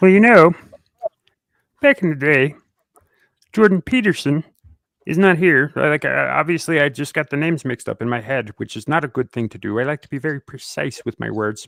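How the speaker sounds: frog-like put-on voice. Speaker drops into a Jordan Peterson impression after a Kermit the Frog joke. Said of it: "in the voice of uh, Jordan Peterson. A K A Kermit the Frog".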